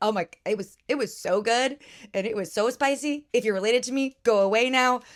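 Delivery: normal talking voice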